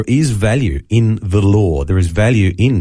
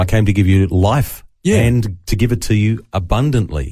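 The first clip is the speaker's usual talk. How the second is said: ordinary delivery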